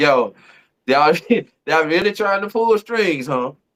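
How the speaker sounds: chuckling, laughing, amused tone. Retelling own reaction to a clip: imitating own laughing remark. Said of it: "I'm just laughing like".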